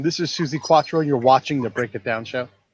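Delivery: ordinary delivery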